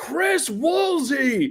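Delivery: mock booming call, very high, projected far. Act out Jorge Garcia calling across the room at a commercial audition, imitating his booming voice. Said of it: "this booming voice from across the room go".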